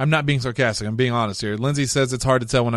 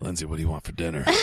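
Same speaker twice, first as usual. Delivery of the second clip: creepy, very low, hushed, raspy hillbilly voice; 8 semitones lower, 9 dB quieter than usual. Talking to Lindsay while playing up a sick raspy voice, creepy hillbilly voice. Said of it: "You're sounding like a creepy hillbilly".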